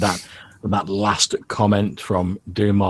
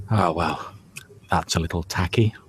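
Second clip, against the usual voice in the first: scathing, critical little mutter under the breath. Narrator voicing companion Jano as she looks around the decorations, muttering under her breath. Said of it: "under her breath".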